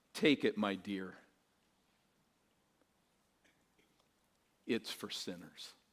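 hushed, soft, low Scottish brogue. Retelling how a pastor bent down to a weeping woman: soft scottish brogue. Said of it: "said softly in his Scottish brogue".

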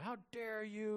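mock preacher voice, high-pitched angry screaming. Acting out Mark Driscoll of Mars Hill Church screaming at men, imitating Mark Driscoll screaming. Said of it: "Mark Driscoll was screaming at men".

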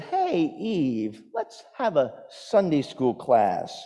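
slick, smooth, oily snake voice. Storyteller voicing the snake as it slithers up to a woman, oily voice. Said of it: "with an oily voice says".

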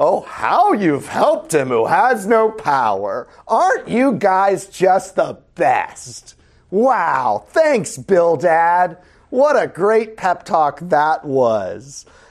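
angry, painful, biting sarcasm, drawn out. Teaching a passage, the speaker reads one character's reply aloud: acting out sarcastic reading. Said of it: "this is sarcasm".

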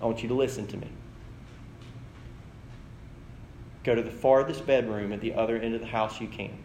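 even, soft, low-pitched calm. Retelling a movie scene where a father instructs her: retelling a calm voice. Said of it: "Calm voice".

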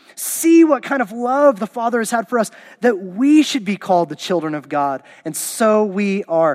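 explosive, forceful poetic delivery.

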